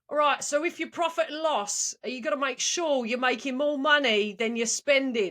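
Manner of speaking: put-on East London Cockney accent. Retelling being asked to do British, reading a text in a Cockney accent. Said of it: "like Cockney".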